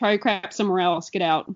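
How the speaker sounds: mock rude, dismissive, harsh telling-off tone. Retelling a pit boss ordering them out: imitating a rude pit boss. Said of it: "she was super rude, and she said".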